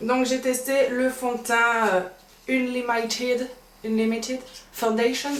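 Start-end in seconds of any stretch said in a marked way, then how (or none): 2.5-5.3 awful, clumsy English accent mangling the words. Speaker naming a foundation she tested, in a bad English accent. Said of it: "mon accent anglais est juste euh, affreux".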